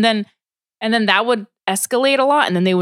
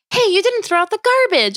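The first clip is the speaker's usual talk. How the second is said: mock playful, joking nagging tone, very high-pitched; 10 semitones higher than usual. Speaker imitates a woman joking with her roommate, mock joking scolding. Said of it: "it was like kind of like a joke".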